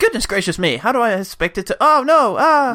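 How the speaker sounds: high, fretting, fussy robot voice. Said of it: "C three P O stuff".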